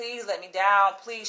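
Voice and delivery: mock imploring, pleading tone with repeated begging. Retelling how a woman with her daughter begged a man to let her down, imitating someone begging. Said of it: "She's begging, pleading".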